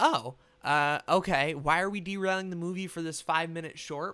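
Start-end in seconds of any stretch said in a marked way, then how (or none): none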